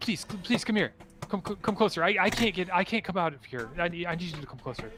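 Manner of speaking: excited, eager pleading character voice. Voicing a trapped figure begging the group to come closer: excited pleading in character. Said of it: "he's getting very excited".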